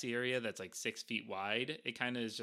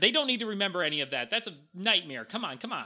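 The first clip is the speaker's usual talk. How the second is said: shouting, higher and louder; 7 semitones higher, 7 dB louder than usual. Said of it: "And she yells at one of the bookworms".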